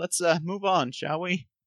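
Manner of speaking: slightly cracking, wavering voice. Playing Robarth, urging everyone to move on, voice cracking a little. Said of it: "voice cracking a little bit".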